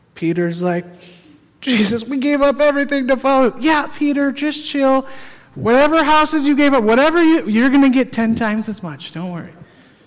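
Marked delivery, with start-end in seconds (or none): 4.0-9.5 put-on patronizing, condescending, dismissive, talking down. Acting out a reply to someone who gave up everything, mock-condescending. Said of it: "I'm sure he didn't say condescendingly like I just did".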